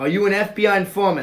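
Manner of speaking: put-on Boston accent. Quoting lines from The Departed to test a Boston accent: Boston accent. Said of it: "I'm gonna rattle off some Boston".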